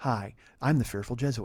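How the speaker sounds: rich, mellow radio voice. Imitating a podcast host introducing himself: Fearful Jesuit's NPR-style voice. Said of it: "It's very N P R where it's very much like this".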